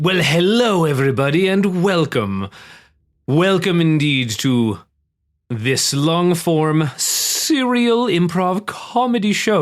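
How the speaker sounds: very slow, drawn-out, stately, dramatic theatre-host delivery. Welcoming everybody to a long-form improv comedy show: dramatic tone. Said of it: "my dramatic tone at the beginning".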